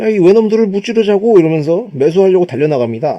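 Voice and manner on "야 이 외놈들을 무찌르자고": high, loud, excited yell. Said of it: "갑자기 흥분하더니".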